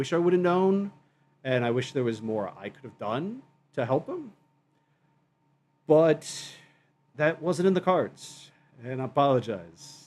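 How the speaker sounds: emotional, choked-up voice catching in the throat. Answering what he would change if he could go back, the speaker is choked up. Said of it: "Getting choked up here a bit".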